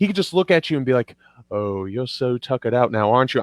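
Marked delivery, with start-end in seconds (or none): 1.5-3.4 mock, unsettlingly calm villain voice, never raised. Describing an actor who never yells, the speaker imitates him: mock eerie calmness. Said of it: "he's got this eerie calmness to him".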